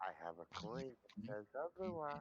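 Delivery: hushed whisper. In a role-play game, a character whispers in a woman's ear: whispering. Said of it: "He whispers in her ear".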